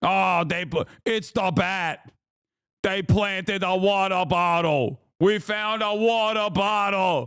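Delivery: put-on New York accent, cop-style voice. Joking that every cop sounds like a Batman villain, the speaker does a New York cop accent impression. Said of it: "Every cop sounds like a Batman villain".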